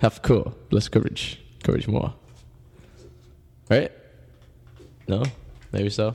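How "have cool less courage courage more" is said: put-on broken English voice.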